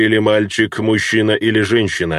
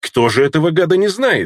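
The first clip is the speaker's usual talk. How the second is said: curt, pointed, higher pitch; 7 semitones higher than usual. Rucia, the wife, answers Ragnar's question about Arvan Tar: short and pointed. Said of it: "коротко и емко выразилась жена Руция".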